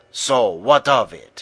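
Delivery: sharp, snapping delivery. Maria answers Paco after he sneers about Luis running; snapping. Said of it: "snapped Maria".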